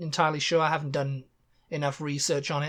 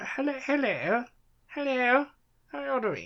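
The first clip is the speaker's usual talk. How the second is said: put-on posh British accent, pitched up; 9 semitones higher than usual. Speaker shows how everybody there talks, greeting someone: posh british accent. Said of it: "everybody talks like that. Talks like the Queen".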